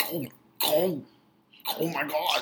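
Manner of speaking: sudden startled exclamation. Retelling how May jumped at the start: imitating May being jumpy. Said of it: "she is so fucking jumpy".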